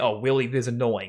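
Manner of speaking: plain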